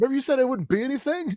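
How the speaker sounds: high, fast, fake-friendly taunting tone.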